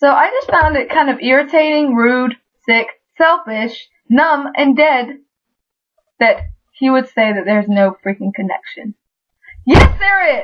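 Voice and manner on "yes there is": outright, high-pitched shouting yell. Arguing back against what someone said, yelling. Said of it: "I'm sorry for yelling".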